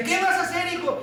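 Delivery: high-pitched, startled, alarmed cry.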